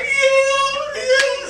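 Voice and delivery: giggling squeak, very high laughing "yeah". Recalling a moment with her, acting out a past high laughing voice. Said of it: "I had the high voice and I was laughing".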